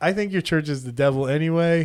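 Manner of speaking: ordinary talk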